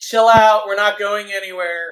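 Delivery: very loud, high-pitched yell. Yelling up to Flicker Wisp in character: yelling up to someone. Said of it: "I'll yell up to Flicker".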